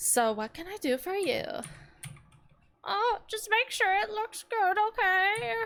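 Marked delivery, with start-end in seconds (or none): 2.8-5.5 put-on high-pitched elderly woman voice. Voicing an old lady customer while playing a game, in an old lady Karen voice. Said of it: "An old lady Karen".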